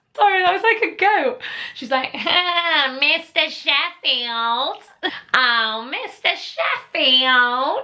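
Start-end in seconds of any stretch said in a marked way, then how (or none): 2.1-7.8 really nasally, very slow drawl. Imitating how a woman she describes talks to Mister Sheffield, imitating a really nasally voice. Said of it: "She has a really nasally voice".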